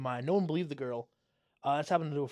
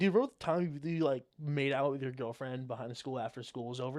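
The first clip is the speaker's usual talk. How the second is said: ordinary delivery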